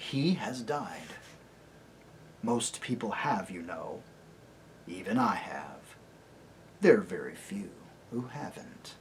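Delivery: very soft, very quiet, low voice. Narrator reads Aslan answering Caspian, Aslan's very quiet voice. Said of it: "said the lion in a very quiet voice".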